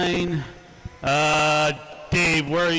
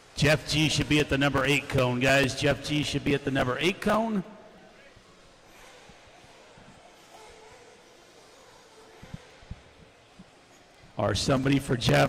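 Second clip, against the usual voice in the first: voice giving out, hoarse, failing. Calling out positions to the group after yelling all day, losing his voice. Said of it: "I'm losing my voice now".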